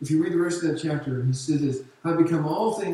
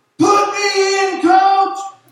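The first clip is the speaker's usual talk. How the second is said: very loud, very high, slow, drawn-out scream; 12 dB louder than usual. Retelling cheering at a football game: imitating himself yelling. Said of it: "And I'm yelling".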